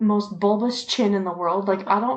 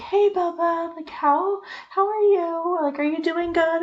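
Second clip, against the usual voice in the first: high, overly bubbly, chirpy, put-on chatter; 8 semitones higher than usual. Retelling how a woman greeted her son from jail: imitating a bubbly voice. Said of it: "so bubbly".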